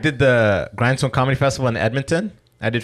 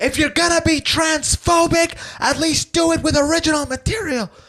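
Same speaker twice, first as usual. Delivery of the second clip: piercing, shrill, very high screaming rant. Retelling what a heckler at the stage edge screamed: imitating someone screaming.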